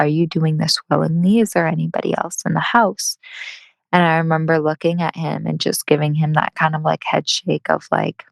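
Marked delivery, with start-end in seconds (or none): 0.0-3.2 whispered voice. Retelling what a guy quietly asked the speaker: imitating a whisper. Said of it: "he whispered to me".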